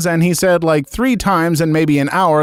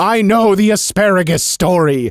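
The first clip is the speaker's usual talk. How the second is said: imitated scream; 3 semitones higher than usual. Reading a story aloud, retelling screaming at a family table: retelling a scream. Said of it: "I screamed".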